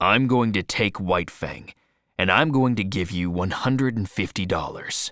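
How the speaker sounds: ordinary delivery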